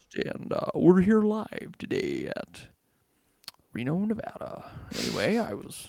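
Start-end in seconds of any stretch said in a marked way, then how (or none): 0.2-4.7 put-on news-anchor voice with swooping pitch. After saying they lack a radio voice, speaker tries one: put-on radio announcer voice. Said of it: "I'm doing such a poor imitation of it, because it's just, it's deep".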